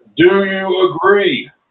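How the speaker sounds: demanding shout. Voicing a master demanding agreement: yelling. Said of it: "Then he just yelled".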